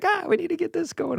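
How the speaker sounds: put-on Yiddish-inflected English accent.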